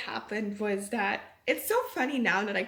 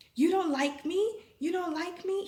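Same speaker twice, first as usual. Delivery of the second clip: yell, higher pitch; 7 semitones higher than usual. Retelling how a stranger in a shop spoke to her: imitating a man yelling. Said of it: "He was, like, yelling to me".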